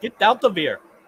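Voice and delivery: high fake Russian accent. Joking with friends in a chat, saying a line: put-on Russian accent. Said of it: "Russian for".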